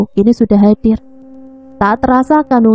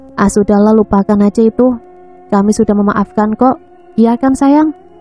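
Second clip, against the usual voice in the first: ordinary delivery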